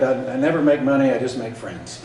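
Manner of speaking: normal talking voice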